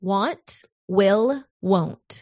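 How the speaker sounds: slow, deliberate, each word carefully spaced apart. Asked by the co-host to say it slower, the speaker repeats the words, said slower. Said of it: "you got to say it slower".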